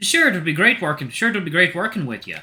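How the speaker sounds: put-on Irish accent. Narrator voices a character's reply in a story, in an Irish accent. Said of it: "I'm giving everybody, like, Irish accents".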